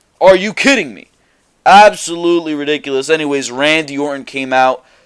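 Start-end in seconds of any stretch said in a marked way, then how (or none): none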